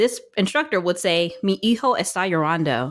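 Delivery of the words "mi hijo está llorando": mock flat Spanish with no accent. The speaker imitates a spanish instructor saying a sentence; imitating instructor's accentless spanish. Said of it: "Dead, no accent".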